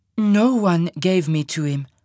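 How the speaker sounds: eerily composed, unruffled, strangely calm and slow. Narrator reads Monique answering the big man's accusation, strangely calm. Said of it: "strangely calm in the circumstances".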